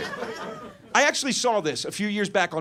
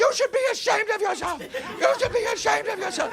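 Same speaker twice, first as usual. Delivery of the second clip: put-on, shrill, very high-pitched shriek. Retelling how a teenage girl screamed at grown-ups at big forums, Greta screaming impression. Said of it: "She was screaming at grown-ups".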